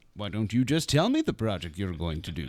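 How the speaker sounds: plain, direct, blunt tone, cutting in. Retelling an email from a woman about a tifo: imitating Allison. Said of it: "that's how she sounds".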